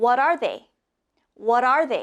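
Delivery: quick, rapid-fire repetition. Leading a group repeating a question three times, fast. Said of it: "Let's do it fast three times".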